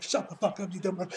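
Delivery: ordinary talk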